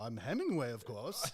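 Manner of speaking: fake, put-on upper-class posh British accent. Retelling how a man in costume answered who he was supposed to be, posh British accent. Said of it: "talking in like a like a posh British accent".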